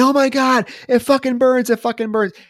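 mock agonized scream, very high-pitched. Retelling a show scene where zombie puke lands on a woman's neck, imitating agonized screaming. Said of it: "she starts screaming in fucking agony".

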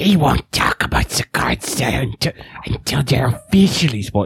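badly done breathy whisper. Starting off the news bit like always, doing a bad Smeagol voice. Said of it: "I don't do a good Smeagol voice".

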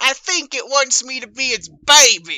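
very loud, high, drawn-out yell. Playing a character in a game, yelling through the microphone. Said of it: "I'm gonna yell through the microphone".

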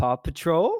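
pitch rising at end of "Patrol". Imitating how someone says a show name, rising pitch on patrol. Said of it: "it has an upwards on that last L".

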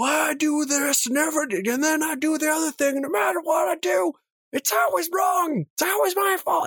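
mock, very high-pitched, screeching, screamed ranting. Retelling a man heard through a hotel wall: imitating a man screaming. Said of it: "I just hear a guy screaming".

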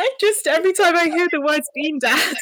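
laughing through the words. Introducing this episode before the making and baking, cracking up. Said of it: "I'm still cracking up about Bean Dad".

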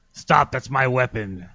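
electronic, robotic talking-toy voice box speech. Demonstrating to the others what a talking doll says, in a vocoder box voice. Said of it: "he's got a vocator box".

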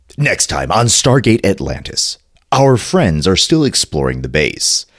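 TV promo announcer voice, trailer-style narration. Making a next-episode promo for Stargate Atlantis, TV promo announcer voice. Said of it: "I gotta have a promo voice".

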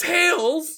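very high-pitched, dumb-sounding cartoon voice. Repeating a funny moment, in a dumb Sonic voice. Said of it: "In his fucking dumb Sonic voice".

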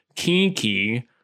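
weird, put-on cat-like accent. Imitating a voice actor's cat voice in a weird accent. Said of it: "him doing this weird accent where he's like".

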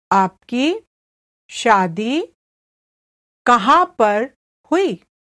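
slow, halting, deliberate, careful word-by-word delivery. Repeating a Hindi phrase for learners: said again slowly. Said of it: "I'll say it again slowly".

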